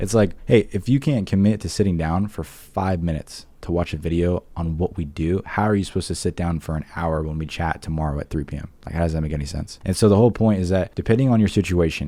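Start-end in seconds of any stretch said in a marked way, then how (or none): none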